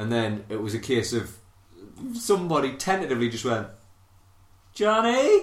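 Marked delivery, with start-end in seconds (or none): 4.7-5.4 put-on timid, sheepish voice, higher. Retelling how a friend tentatively called out to someone pinned to a door: imitating a sheepish call. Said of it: "sheepish as out".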